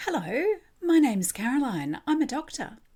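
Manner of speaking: put-on warm voice for small child. A doctor retelling greeting a four-year-old girl: mock friendly voice for a child. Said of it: "in my most friendly, child welcoming voice".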